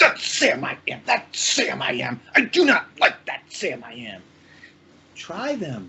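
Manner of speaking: furious, slow, angry put-on character voice. Acting a nameless character who is always angry: angry character voice. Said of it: "I have him be so angry, and he's like".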